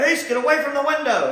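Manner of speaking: genuine full yell, very high and very loud. Praising how he yells in the scene by acting out the line: retelling a natural yell. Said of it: "It's much more of a natural yell when he's like".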